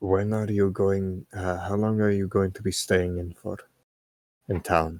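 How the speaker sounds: hushed, whispered aside. Waiting for the group to run off, a player speaks to the ogre, whispering. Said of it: "I'm gonna whisper over to the ogre".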